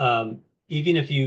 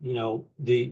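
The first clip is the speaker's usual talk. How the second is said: normal talking voice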